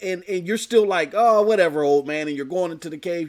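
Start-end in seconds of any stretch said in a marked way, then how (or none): 1.1-2.3 loud, dismissive put-on brush-off tone. Acting out a child ignoring a warning about a bear: imitating a dismissive reply. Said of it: "You're being dismissive".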